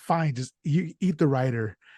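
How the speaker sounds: usual speaking voice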